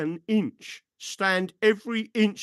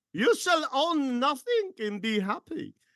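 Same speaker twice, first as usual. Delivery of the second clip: heavily laid-on, terrible put-on German accent; 8 semitones higher than usual. Answering a question, quoting the World Economic Forum, in a bad German Mickey Mouse voice. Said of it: "that was my terrible German Mickey Mouse Soviet voice combined".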